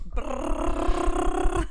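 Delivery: high, rolled-tongue drum roll sound. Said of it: "drum roll, please".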